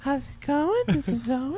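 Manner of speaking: put-on tiny, soft little-boy voice. Describing Owen's podcast, the speaker does Owen's tiny little boy voice. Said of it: "he had the tiniest little boy voice".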